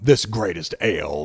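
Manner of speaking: deep, pretty commercial voice-over read. Retelling recording a beer commercial for a producer, doing a deep voice. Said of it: "Nice deep voice".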